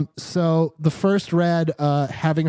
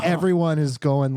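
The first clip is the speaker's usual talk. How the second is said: plain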